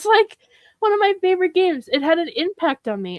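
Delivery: choked-up, teary, very high voice. Speaker talking about one of their favorite games, tearing up. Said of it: "I'm tearing up a little bit".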